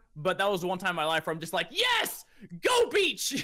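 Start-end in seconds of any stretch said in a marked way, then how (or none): 1.7-3.5 put-on very high, swooping, over-excited fanboy cheering. Retelling seeing the home beach in a movie: imitating own excited cheering. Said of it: "far too excited for the beach".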